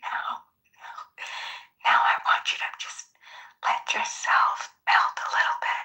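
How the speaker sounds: put-on ASMR host voice. Acting out Bima doing an ASMR show in the other room, Bima's ASMR voice. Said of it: "doing an A S M R show".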